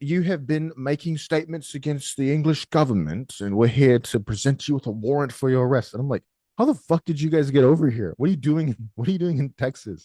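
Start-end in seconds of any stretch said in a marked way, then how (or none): 0.0-5.9 British police officer voice, UK copper manner. Joking about getting arrested, the speaker voices the UK police: imitating a UK police officer. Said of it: "I'm gonna get arrested by the U K police".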